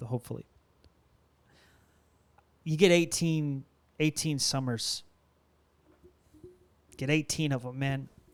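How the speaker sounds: trying not to get emotional, holding it back. A parent speaking about their kids, holding back emotion. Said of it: "I'm trying not to get emotional".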